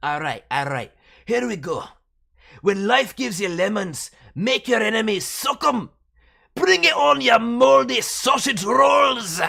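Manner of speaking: thick Scottish brogue, high, loud and booming. Reading the character's line again correctly: strong Scottish accent. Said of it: "Alpha is Scottish, born and raised. The accent is strong".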